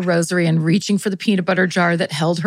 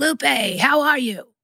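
high, yelled, in a smoker's voice; 6 semitones higher than usual. Telling a story, imitating her sister yelling a greeting as she enters the house: retelling a smoker's-voice yell. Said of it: "who has a smoker's voice rivaling George Burns".

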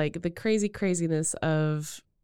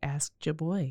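signature pop-star delivery, tossed off casually; 3 semitones lower, 7 dB quieter than usual. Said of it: "in his very [name]-like way just said".

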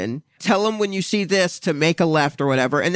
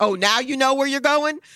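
raised, pitched-up, yelled words; 8 semitones higher than usual. Retelling the sister yelling back at the driver: imitating someone yelling. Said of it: "my sister yells back".

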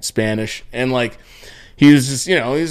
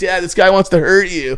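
put-on scared child's scream, high and panicked; 6 semitones higher than usual. Retelling bringing the phone to their dad, retelling a scream. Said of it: "I was like screaming like".

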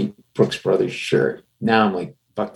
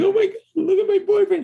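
mock, very high, tearful sobbing. Retelling a girlfriend's reaction after her boyfriend is cut in a bar, imitating her crying. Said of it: "the girlfriend's crying like".

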